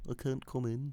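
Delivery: high-pitched, mocking impression voice. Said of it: "He's just like".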